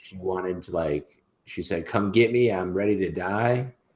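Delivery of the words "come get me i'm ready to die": higher put-on scream. Retelling what a naked woman in the airport concourse screamed: imitating someone screaming. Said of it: "screaming at the top of her lungs".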